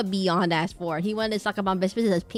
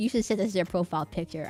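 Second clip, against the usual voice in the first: ordinary talk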